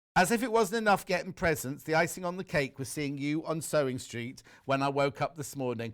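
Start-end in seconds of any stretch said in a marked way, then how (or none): none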